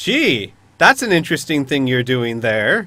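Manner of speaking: slightly overloud delivery. A character glances at a companion and remarks, a little too loudly. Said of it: "a little too loudly".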